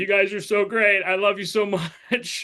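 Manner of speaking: put-on crying. Retelling a Thanksgiving dinner in a Batman outfit: imitating own past crying. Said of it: "crying, being like".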